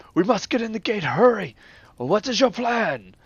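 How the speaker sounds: very loud, high, urgent shout. Voicing the captain who runs up during the siege: urgent captain in battle. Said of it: "captain run up to Puff, and he goes".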